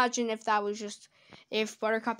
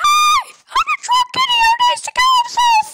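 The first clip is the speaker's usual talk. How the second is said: ear-splitting, very high, very loud, shrill, squeaky cartoon scream; 12 dB louder than usual. Calling this one the worst, the speaker screams a Bubbles impression. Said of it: "from me screaming this shit".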